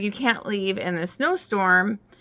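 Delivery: normal talking voice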